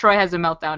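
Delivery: ordinary talk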